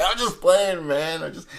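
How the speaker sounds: high, loud blurt.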